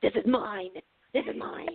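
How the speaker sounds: eerie, demonic, possessed-sounding voice. Retelling a child's answer at the pool: imitating a demonic tone. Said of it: "her voice took on a demonic tone".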